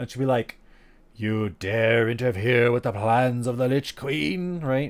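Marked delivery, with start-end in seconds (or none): 1.2-4.6 low, rotting, moist, wet-sounding voice. Describing a game mission where she shows up: rotting, moist Lich Queen voice. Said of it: "her voice is rotting and moist and gross".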